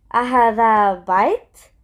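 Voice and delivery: questioning intonation, pitch rising at the end. Teaching Arabic, showing how the question sounds: questioning rising intonation. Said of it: "you can hear by my tone".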